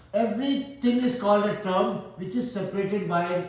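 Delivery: normal talking voice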